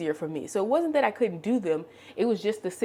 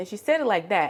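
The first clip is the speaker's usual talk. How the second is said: normal talking voice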